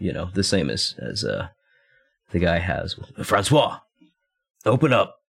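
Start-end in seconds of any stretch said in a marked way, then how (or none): 3.2-5.1 yelling, much higher. Beating on a door like a cop, yelling through a door. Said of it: "we'll also yell".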